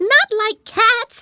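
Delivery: piercing, impassioned, shrill squeal, very high and loud. Reading a story aloud, the mouse answers an apology: shrill, passionate mouse voice. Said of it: "cried the mouse in a shrill, passionate voice".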